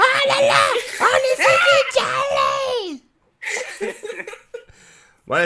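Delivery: very high-pitched, loud laughing yelp.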